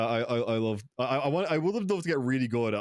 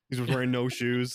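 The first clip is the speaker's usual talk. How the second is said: usual speaking voice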